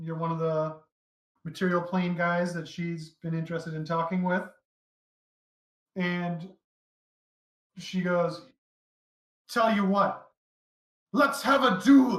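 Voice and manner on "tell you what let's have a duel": loud, high-pitched called-out line. Voicing her challenging the armored newcomer to a duel, really loud challenge. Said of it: "she like says it like really loud".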